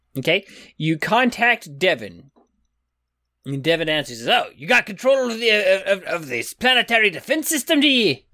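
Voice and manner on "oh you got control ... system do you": put-on high-pitched accent mixing Highland Scots and Italian. Speaker voices Devin answering when contacted, Devin in Highland Italian accent. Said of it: "Such a great Highland Italian accent there".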